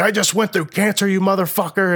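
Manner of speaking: high, put-on, raging, furious scream. Recounting a confrontation with a guy: retelling a scream. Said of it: "I'm like screaming at this guy".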